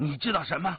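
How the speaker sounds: severe, loud tone. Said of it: "黑衣人厉声问道".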